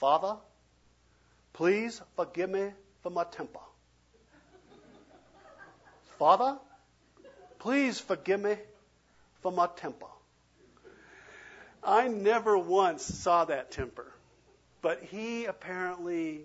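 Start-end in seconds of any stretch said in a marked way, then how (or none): 0.0-10.1 quick, heavy southern drawl, laid on thick. Retelling how a fellow always prayed at gatherings, in a thick southern drawl. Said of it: "in his thick southern drawl these words".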